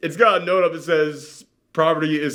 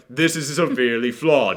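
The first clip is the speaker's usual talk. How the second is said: deliberately put-on British accent; 3 semitones lower than usual. Acting out an onlooker spotting a film's flaws: british accent. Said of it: "I'm still doing the British accent".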